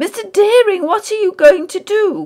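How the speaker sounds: loud, very high cry, called out. Sewell calls to mr. deering, who has grabbed a bottle, crying out. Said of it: "cried Sewell".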